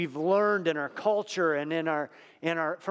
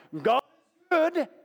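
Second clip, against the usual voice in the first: put-on broad English accent, very high; 11 semitones higher, 4 dB louder than usual. Retelling how he would start off most services, big English accent. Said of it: "with this big English accent".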